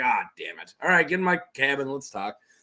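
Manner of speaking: put-on character voice of an older man. Retelling a scene from the book, voicing the character: Old Griff voice. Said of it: "that voice for Old Griff".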